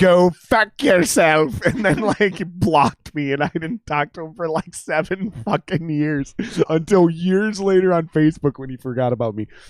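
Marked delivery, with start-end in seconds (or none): 0.0-1.6 loud, sarcastic put-on Irish accent. Retelling someone's reply to the speaker's sarcastic joke, in a put-on irish accent. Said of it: "in my Irish accent".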